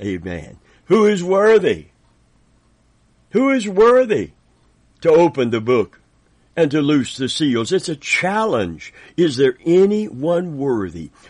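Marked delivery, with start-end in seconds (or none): 0.9-7.7 loud, high, proclaiming angelic herald voice. Reading scripture aloud, saying the angel's line: acting out the angel's loud proclamation. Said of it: "I'm gonna say it like the angel said".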